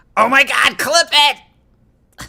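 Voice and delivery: shrill, very loud, very slow drawn-out outburst. Doing a best impersonation of Snuggie saying a catchphrase: Snuggie impersonation. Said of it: "let me do my best Snuggie impersonation".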